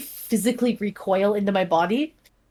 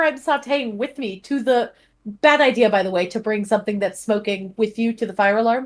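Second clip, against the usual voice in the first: plain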